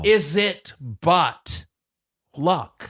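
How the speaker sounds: mock Shakespearean theatrical old English speech. Turning a proverb about lottery tickets into Shakespeare when asked: Shakespearean voice. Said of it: "Say it in Shakespearean way".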